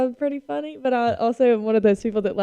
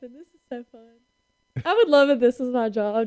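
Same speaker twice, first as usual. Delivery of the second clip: speech broken by laughter. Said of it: "I'm just laughing".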